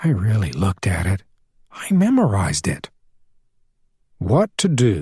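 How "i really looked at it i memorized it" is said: in a whisper. A character answers another about a car, whispering. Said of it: "Janet was whispering".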